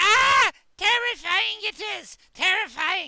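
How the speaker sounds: very high, loud, shrill, squeaky greasy creature shriek. Narrating a scene, voicing a little guy frightened when Mary appears: squeaky, greasy shriek. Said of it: "he has a a squeaky, greasy kind of a voice".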